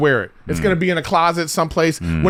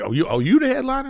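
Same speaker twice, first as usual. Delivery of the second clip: put-on high voice loaded with attitude; 7 semitones higher than usual. Retelling how the opening act greeted the headliner, imitating the opener's attitude. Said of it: "this is the guy's attitude up top".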